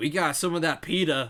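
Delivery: screaming. Voicing someone out back answering a call for flat bread: screaming. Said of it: "just kinda scream up front, and he says".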